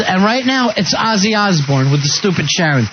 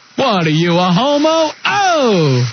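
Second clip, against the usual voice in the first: bad, very slow drawl with stretched "oh"; 3 semitones higher than usual. Performing an impression after being asked to do it: bad Dice impression. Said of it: "let me hear you do it".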